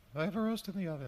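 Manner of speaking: very high, disguised, sweet put-on voice. Recounting how he spoke to victims, in a very high voice. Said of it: "he also said it in a very high voice".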